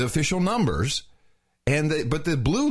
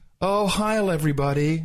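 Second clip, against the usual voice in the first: put-on demure voice. Imitating the president's usual opening greeting: imitating a demure greeting. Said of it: "a demure kind of like".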